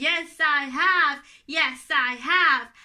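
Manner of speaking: speaking loudly. Answering the teacher's question in the voice asked for: loud voice. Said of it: "Have you brought your loud voice?".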